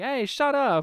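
high, snappy, snapping-back tone. Retelling how a character answers a catcaller: imitating someone snapping back. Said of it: "snaps back at them".

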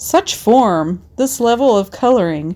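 put-on sports commentator delivery, announcer style. Reviewing her weekly pieces in an Olympic-style sports announcer voice. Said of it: "I'd put on a sports announcer's Olympic-style voice".

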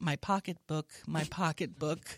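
ordinary talk

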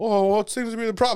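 acted, very high, clueless playing-dumb voice. Retelling your reply when told to step out of the car: acting out playing dumb. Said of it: "Like an idiot".

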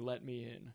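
put-on seductive voice. Imitating the Collector trying to seduce someone: suggestive Collector voice. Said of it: "very suggestively repeats the words".

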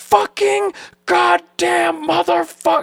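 all-out raw, rough screaming, very high-pitched. Retelling how he punched something and screamed: retelling full-on screaming. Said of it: "I was that screaming".

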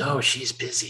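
put-on little boy's whisper, whispering child voice. Telling a joke about a telemarketer calling a house; little boy's whisper. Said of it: "a little boy answers in a whisper".

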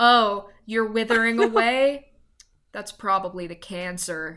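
mock-deadpan delivery. Imagining the doctor diagnosing a cancer patient, mimicking a deadpan doctor. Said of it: "he was just so deadpan".

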